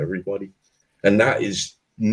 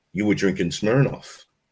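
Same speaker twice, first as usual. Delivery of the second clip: put-on Polish-accented voice. Quoting a man he was chatting with, in a Polish accent. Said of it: "in his Polish accent".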